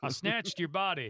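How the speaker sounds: put-on Texas accent. Joking about a Texas remake of Body Snatchers: put-on Texas accent. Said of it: "the Texas one where they go".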